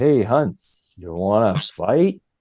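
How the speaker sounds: chilled-out, easygoing California dude voice and lingo. Retelling a Canucks player asking to fight, Craig Cox impression, California dude. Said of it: "California Scooby-Doo kind of way about him".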